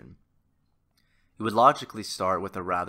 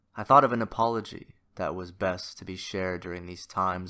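normal talking voice

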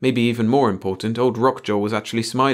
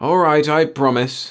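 testy, irritable, grudging, pitched-up voice; 5 semitones higher, 4 dB louder than usual. Reading the chief's reply in a story, testy. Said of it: "the chief acceded testily".

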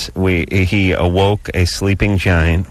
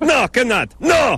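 put-on Middle Eastern accent, pitched much higher. Speaker plays a food-stand owner answering customers, Middle Eastern accent impression. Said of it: "That's my impression of everyone who runs a Middle Eastern place".

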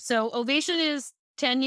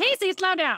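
loud, high-pitched telling-off. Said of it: "they're like".

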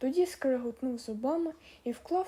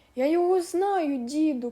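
loud, drawn-out, victorious triumphant shout; 3 semitones higher, 7 dB louder than usual. Narrator reads the brute calling out to the old man; triumphantly shouting. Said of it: "переможно гукав дурна сила".

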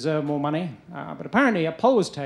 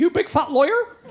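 very high, put-on West Country accent; 10 semitones higher, 3 dB louder than usual. Joking that lawyer sounds like liar, in a West Country accent. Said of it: "liar with a West Country accent".

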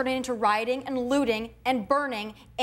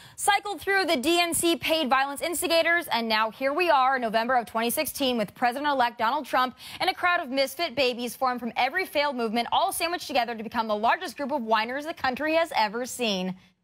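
ordinary talk, nothing marked

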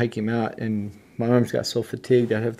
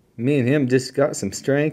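ordinary talk, nothing marked

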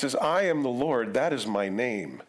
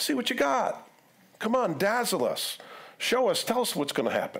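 very high, swooping, mocking sarcastic tone; 10 semitones higher than usual. Voicing God challenging those who claim to be gods: sarcastic taunt. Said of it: "God being a little sarcastic".

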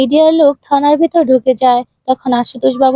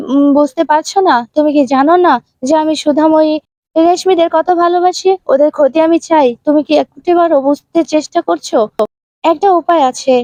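ordinary delivery

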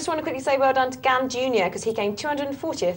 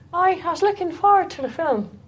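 put-on Irish accent, raised pitch; 5 semitones higher, 3 dB louder than usual. Commenting on TV, the speaker does an Irish accent impression. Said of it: "That's my Irish impression".

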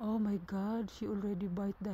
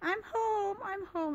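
rough, very high, drawn-out cat voice; 12 semitones higher than usual. Describing how her cat sounds coming home: rough cat voice. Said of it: "she really sounds rough comparing to Smokey".

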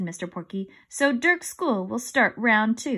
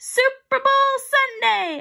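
loud, high, called-out shout; 14 semitones higher, 5 dB louder than usual. Calling out an answer to a quiz question: shouted. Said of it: "I shouted".

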